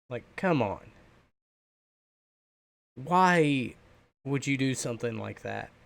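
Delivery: angry, upset voice, shaking and trembling. Telling viewers about the voice actor situation, the speaker is angry and shaking. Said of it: "And I'm shaking right now".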